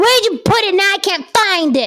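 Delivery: put-on high, whining child voice.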